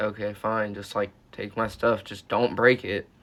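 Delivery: plain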